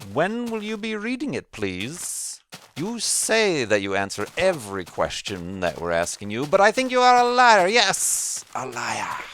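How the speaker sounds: extremely sarcastic, ironic, loud, swooping voice. Reading a viewer's donation question aloud, as asked, in an ironic sarcastic voice. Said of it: "can you take the most ironic and sarcastic voice as you can?".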